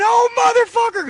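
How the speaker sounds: shrill, very high, high-pitched crying scream. Retelling how he bent over screaming once the back door closed, imitating Bubba's high-pitched screaming. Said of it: "Bubba had a high pitched voice".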